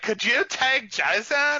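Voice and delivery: drawn-out valley-style speech. Imitating how a man talked, in a Pauly Shore meets valley girl voice. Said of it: "which is like a valley".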